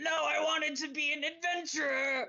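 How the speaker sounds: screaming out loudly. Narrating a tabletop game, voicing a character who topples over, screaming out. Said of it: "he screams out".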